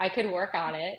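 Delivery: too quiet voice. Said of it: "a little louder than that".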